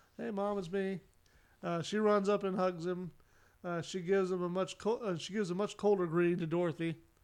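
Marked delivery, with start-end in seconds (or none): none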